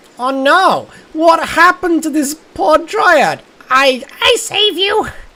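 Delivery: very high-pitched, drawn-out little kobold voice. Voicing Page Junior finding a poor dryad: high-pitched kobold voice. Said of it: "High, high-pitched, kinda kobold voice".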